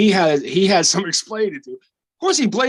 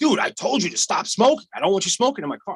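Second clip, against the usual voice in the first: mock irritated, fed-up, angry yell; 2 semitones higher than usual. Retelling how a man started yelling at him: retelling an angry yell. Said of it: "he starts fucking yelling at me".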